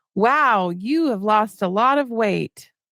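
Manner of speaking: usual speaking voice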